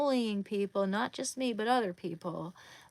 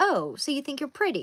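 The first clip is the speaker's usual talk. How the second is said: loud, put-on condescending mean-girl voice; 4 semitones higher, 5 dB louder than usual. Retelling what a woman said behind them while drawing a portrait, condescending Regina George voice. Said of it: "said it super condescendingly".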